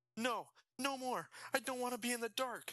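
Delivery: very high, frantic, panicked shout. Dragged back into a dark cell, Jason shouts: panicked shout. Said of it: "Jason shouted".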